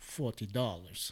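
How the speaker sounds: plain delivery in put-on Russian accent. Retelling what the seller answered when asked the price, in a Russian accent. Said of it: "in a Russian accent".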